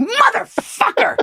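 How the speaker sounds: very high-pitched, cranky, mad parrot cry. Retelling how the parrot got mad: imitating an angry parrot.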